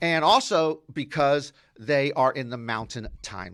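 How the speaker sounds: plain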